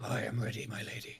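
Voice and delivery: deep, throaty, guttural rumbling voice from far down. Voicing a demon answering the lady: deep guttural rumbling voice. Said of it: "you hear a deep, guttural rumble".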